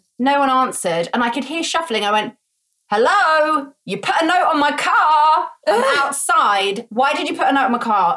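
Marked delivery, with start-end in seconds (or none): 2.9-8.2 put-on loud calling out, screaming. Retelling banging on a man's door over a note on the car, screaming through it. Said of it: "I'm screaming through the door".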